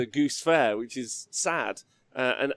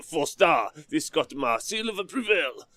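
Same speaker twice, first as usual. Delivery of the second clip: slow, fake, put-on French accent; 4 semitones higher than usual. Showing how a review of a good list sounds: fake French accent. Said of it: "doing a review in a French accent".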